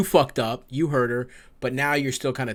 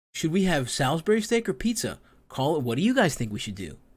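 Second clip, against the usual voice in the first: put-on child's stilted news-anchor voice, read off; 3 semitones higher than usual. Mocking how this man asked a question, like a child reading a prompter. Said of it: "a child reading a, off the prompter".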